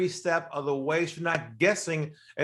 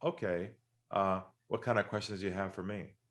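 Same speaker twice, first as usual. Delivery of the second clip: voice dropped very low, soft and hushed; 8 semitones lower, 8 dB quieter than usual. Retelling a meeting, the speaker quotes a man who lowered his voice: lowered voice. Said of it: "He lowers his voice and he says to me".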